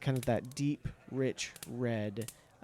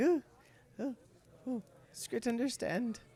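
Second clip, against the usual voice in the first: put-on cowering voice, much higher; 11 semitones higher than usual. Narrating a tabletop game scene, voicing Skrit after a threat, cowering Skrit voice. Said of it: "he kind of cowers and he's like".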